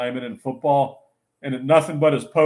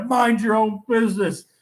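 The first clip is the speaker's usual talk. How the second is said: put-on scream, higher; 9 semitones higher than usual. Retelling a friend screaming at an old man in a car: imitating someone screaming. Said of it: "Lenny started screaming".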